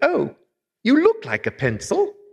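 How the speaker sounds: put-on very high, sing-song Welsh child voice. Retelling what a little boy on his lap said, in a little Welsh voice. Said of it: "in his little Welsh voice".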